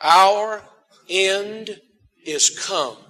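said slowly, unhurried pace. A speaker leads listeners in repeating a Bible verse together, said slowly. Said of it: "Let's say it slowly".

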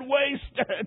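choked out through sobs, words broken. Retelling the man falling back after his scream: imitating sobbing speech. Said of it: "Then he sobbed and said".

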